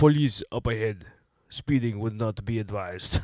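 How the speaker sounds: put-on heavy, deliberate, laid-on Austrian accent. Telling friends what the Arnold voice on Waze says, speaker does an Arnold impression. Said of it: "Arnold's just like".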